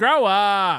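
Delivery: shouted, yelled out. Retelling catching two others using the catchphrase: imitating others yelling. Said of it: "I caught Merch and Chad both yelling".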